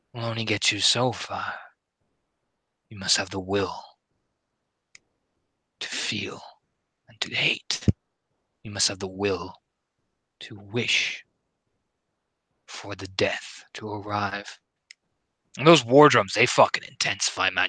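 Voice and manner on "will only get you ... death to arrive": icy, deathly cold voice, much slower. Game narrator voices a woman speaking from behind the player, cold deathly voice. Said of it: "it's cold. Cold as death itself".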